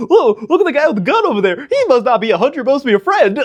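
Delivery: naive, way-too-excited chimp voice, very high. Imagining how a chimp would talk, in an excited, naive chimp voice. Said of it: "pretty much a voice like that".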